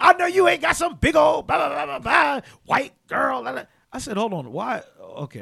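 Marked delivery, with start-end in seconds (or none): 0.0-3.6 very high, loud put-on woman voice. Retelling what the wife would say, imitating the wife's voice. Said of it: "Why do you automatically do that voice?".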